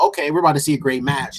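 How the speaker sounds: usual speaking voice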